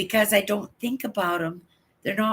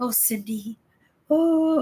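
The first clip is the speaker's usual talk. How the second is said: put-on sick voice, higher pitched; 4 semitones higher than usual. Retelling a friend's Saturday morning phone call: imitating Lorraine's put-on sick voice. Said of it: "she puts on that sick voice".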